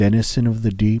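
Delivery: ordinary delivery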